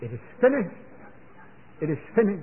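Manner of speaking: high, triumphant cry.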